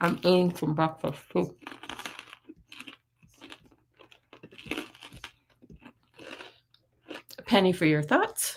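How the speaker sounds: talking with mouth full. Reading viewer comments while eating breakfast, talking with mouth full. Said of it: "Sorry to eat with my mouth full".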